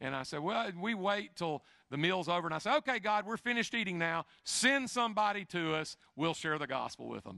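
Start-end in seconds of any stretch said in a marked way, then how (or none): 2.8-7.4 acted-out sarcastic, solemn tone. Retelling what he said to god after a meal, retelling a sarcastic prayer. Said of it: "And I'm being sarcastic".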